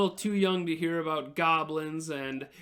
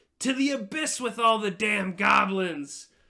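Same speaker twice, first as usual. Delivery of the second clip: hearty cheer called out tavern-style; 4 semitones higher than usual. Narrating a cheering tavern crowd, one guy yells, yelling. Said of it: "he yells".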